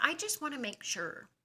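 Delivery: very high-pitched, careful, concerned, worried voice. Retelling a doctor's words before an X-ray: imitating a doctor's worried tone. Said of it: "uses that tone".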